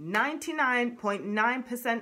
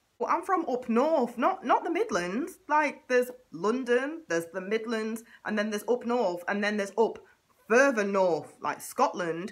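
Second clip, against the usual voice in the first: plain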